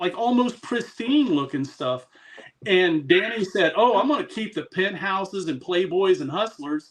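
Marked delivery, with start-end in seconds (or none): none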